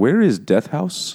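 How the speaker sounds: fake, vague Polish accent. Retelling a man asking strangers where a house is, put-on Polish accent. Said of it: "asking in whatever a Polish accent is".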